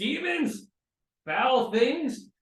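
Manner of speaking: very loud, high-pitched battle-style yell. A game player's character sees things popping out of a tree, shouting. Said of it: "just shouts".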